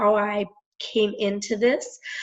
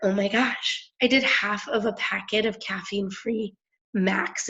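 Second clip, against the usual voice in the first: normal talking voice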